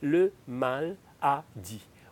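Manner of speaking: maladie said very slowly, split into le mal a dit.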